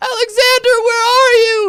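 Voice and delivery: shrill, very high, very loud calling mother voice. Game master voices a creature speaking to alexander, mimicking his mother's voice. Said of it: "In exactly your mother's voice".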